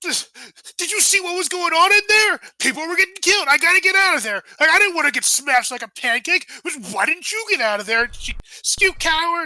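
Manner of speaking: angry defensive tone. Retelling a couple's fight, voicing the man's reply, retelling an angry fired-back retort. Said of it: "he fires back".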